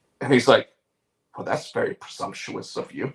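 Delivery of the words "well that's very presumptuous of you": put-on deep British accent, low, breathy, half-whispered. Retelling an actor's reply to a talk show question: imitating a deep British accent. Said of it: "he says it in that deep British accent".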